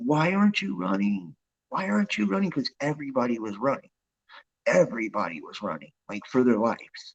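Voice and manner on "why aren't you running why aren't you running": very high-pitched screaming. Retelling a dream, screaming at oneself: retelling a scream. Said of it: "I'm screaming at myself".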